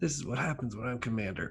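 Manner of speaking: tearful, muttered grumbling, near tears. A narrator voices the Tulip, last to leave, Tulip grumbling under her breath. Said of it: "she grumbles under her breath".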